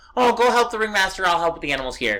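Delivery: sweet, nice-lady tone. Retelling how a character softens her tone after anger: imitating Catherine's softened nice tone. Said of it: "becomes nice and is like".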